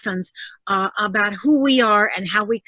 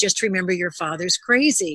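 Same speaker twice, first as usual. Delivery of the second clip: put-on muttering under the breath; 2 semitones lower than usual. Retelling what the mother said from the kitchen: imitating someone muttering under her breath. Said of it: "say under her breath".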